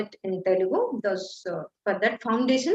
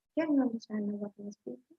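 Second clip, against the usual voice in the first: low, quick mumble, words blurring together; 9 dB quieter than usual. Teacher demonstrating the word murmur to students, murmuring. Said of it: "this is called murmuring".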